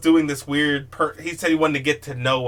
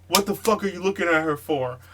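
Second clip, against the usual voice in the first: put-on aggressive, mean drunk voice, yelling; 3 semitones higher than usual. Retelling how a drunk friend yelled at a taxi driver: imitating someone yelling. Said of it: "he's just yelling at the driver".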